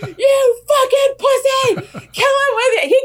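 very high-pitched, loud yelling. Speaker retells what they yelled at the screen: retelling a yell at the screen. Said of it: "I'm yelling at the screen".

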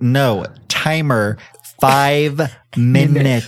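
put-on angry voice, enunciated word by word. Speaker acts out how they talk to a voice assistant, mock-angry, over-enunciating. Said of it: "You're, like, really pissed off".

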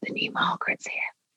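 very soft, very quiet hushed whisper. Recalling someone coming up to share the news, retelling a whisper. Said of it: "came up to me and whispered".

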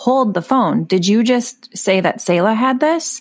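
ordinary delivery

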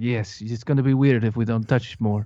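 put-on Scandinavian accent with a Russian sound. Acting out a Scandinavian director's reply, in a Scandinavian accent that sounds Russian. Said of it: "that sounded Russian".

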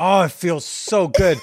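mocking taunting tone. Retelling a scene where a character taunts another: imitating someone taunting. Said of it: "taunting her".

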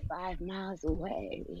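very quiet, hushed, sultry ad voice. Imitating a pop-up ad on illegal TV websites, put-on hot, sultry voice. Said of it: "that sounded kind of hot when you did it".

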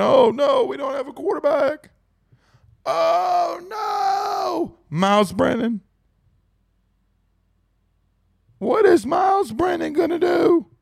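very high, slow, panicky fretting, "no" drawn out. Mocking panicking fans by imitating them: Bill Clinton voice. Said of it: "Why do I sound like Bill Clinton?".

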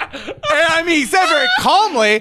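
speaking through laughter.

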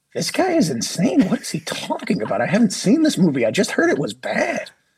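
high, incredulous, scoffing, skeptical voice.

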